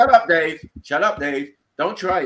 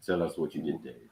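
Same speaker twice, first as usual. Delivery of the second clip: mock smooth radio voice, lower and quieter; 13 dB quieter than usual. Taunting another speaker mid-argument, put-on smooth radio voice. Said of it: "Do you want me to use my smooth radio voice?".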